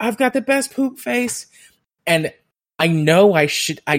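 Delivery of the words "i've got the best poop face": put-on yelling voice, pitched higher. Retelling what a client said about herself: imitating someone yelling. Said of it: "I'm pooping and I'm yelling".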